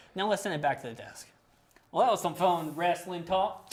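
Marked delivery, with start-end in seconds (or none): 1.9-3.8 put-on, hokey, country hillbilly accent. Sending the show back to the desk as a joke: put-on hillbilly voice. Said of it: "you ruined my hillbilly voice".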